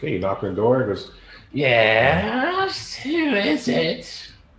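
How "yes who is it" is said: put-on very high, very slow wicked old hag voice. Narrating a game, voicing whoever answers the knock, in an old evil hag voice. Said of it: "that sounds like an old evil hag".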